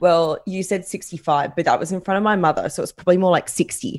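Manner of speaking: ordinary talk, nothing marked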